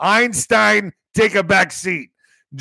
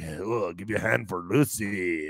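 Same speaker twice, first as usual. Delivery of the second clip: seedy, grimy, sleazy club announcer patter; 11 semitones lower, 11 dB quieter than usual. Mocking how these announcers all sound the same, grimy announcer voice. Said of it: "It's like that grimy, like".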